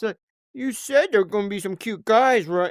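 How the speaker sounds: high, whiny, complaining tone. Imitating how a woman used to talk, doing her line: imitating a whiny voice. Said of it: "like whiny".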